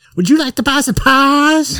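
very high-pitched put-on voice. Imitating how a guy urges people to buy pies, put-on high-pitched voice. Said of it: "he does it like in a high-pitched voice".

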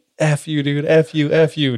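mild, half-voiced yelling outburst. Retelling a paintball game where someone accuses Jay: retelling someone's yelling. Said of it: "someone just starts yelling".

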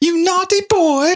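very high, squeaky cartoon lady voice. Speaker recalls a cartoon bit and quotes it: Bugs Bunny lady impression. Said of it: "Bugs Bunny, when he would imitate the lady".

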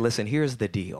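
ordinary talk, nothing marked

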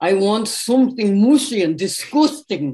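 put-on Liverpool accent. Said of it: "said in his Liverpool accent".

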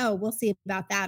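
ordinary delivery

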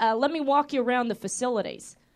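plain

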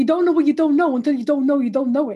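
loud, put-on, best-effort New York accent. Quoting a former coworker from new york, in a new york accent. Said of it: "I'll try and do my best New York accent".

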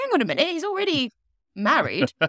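high, fast, incredulous outburst. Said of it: "I was thinking".

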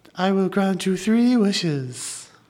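very high-pitched put-on talking fish voice. Asked to do the wish-granting fish's voice, speaking its line in a talking trout voice. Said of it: "can you do the voice?".

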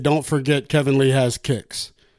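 ordinary talk

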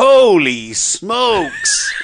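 thrilled, excited, swooping commentator voice, "holy" stretched. Retelling a commentator's closing call of the game: imitating a commentator's excited call. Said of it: "at the end, when he went".

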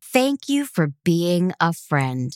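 put-on sarcastic voice. Imitating what Casey would say about missing the party: imitating Casey being sarcastic. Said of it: "With a sarcastic roll of his eyes".

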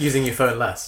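put-on jokey mockery, mocking, teasing tone. Teasing another speaker about a topic he calls his passion: mocking tone, put on for a joke. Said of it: "It sounds like a mocking".

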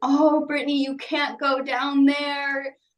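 put-on tearful, crying, pleading voice. Retelling what mom said while crying to her, imitating mom crying. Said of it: "my mom was crying to me and said".

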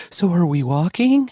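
statement with upspeak, pitch rising on "walking". Mocking an actor's awkward delivery in a bad movie, with Mark Wahlberg upspeak. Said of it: "he talks in questions".

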